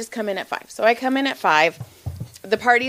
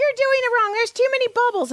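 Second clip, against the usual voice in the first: put-on woman's voice, yelling, higher pitch; 13 semitones higher than usual. Retelling how a lady complained about the pouring: imitating a lady yelling. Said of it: "this one lady starts yelling at me".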